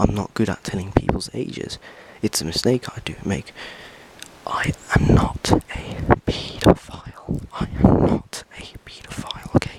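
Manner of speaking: low, quiet, hushed voice. Not wanting the other people nearby to hear, talking in a low voice. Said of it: "I'm talking in a low voice right now".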